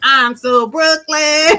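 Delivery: high, gusto-filled, with real feeling. Showing how the item's slogan must be said: said with real feeling. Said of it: "You really have to say it like I'm saying".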